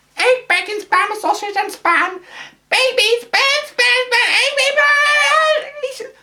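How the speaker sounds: put-on very high, loud, grating, stretched baby voice. Show how annoying Jill sounds, in a high-pitched Terry Jones in Monty Python voice. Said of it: "but on high pitch".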